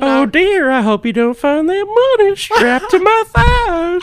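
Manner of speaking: shrill, very high, booming comic cartoon voice. Showing off voices while joking around with others, comic cartoon voice. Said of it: "I do voices, too".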